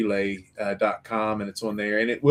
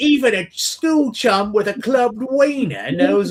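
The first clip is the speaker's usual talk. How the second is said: very high, slow, phony put-on British accent; 13 semitones higher, 4 dB louder than usual. Retelling an actress's made-up lines in the film: imitating Candy Thompson's fake British accent. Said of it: "a girl doing a fake British accent".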